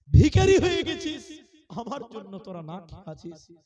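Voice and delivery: high, loud, tearful wailing lament.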